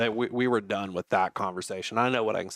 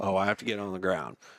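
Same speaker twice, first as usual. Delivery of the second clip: normal talking voice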